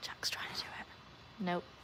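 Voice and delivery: soft, breathy, very quiet hushed whisper. Speaker commenting while Jack tries it, whispering. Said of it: "I don't know why I'm whispering".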